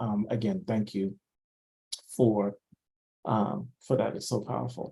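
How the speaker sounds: choked-up voice thick with emotion. Thanking the other speaker after hearing their poem, choked up with emotion. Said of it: "I'm all choked up".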